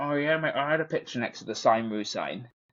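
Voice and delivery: put-on Bradford English accent. Imitating a flatmate met on first going to Leeds: strong Bradford accent. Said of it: "the most Bradford accent ever".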